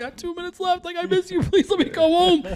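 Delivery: play-acted, very high, tearful, crying pleading voice. Recalling calling their mom on a calling card, imitating their past crying. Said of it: "And I'd be crying to my mom".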